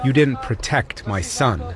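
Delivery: ordinary delivery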